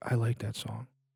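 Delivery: creepy, barely audible whisper right in the ear. Retelling how a stranger whispered in a friend's ear: imitating a creepy whisper. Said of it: "whispers in Bill's ear, like".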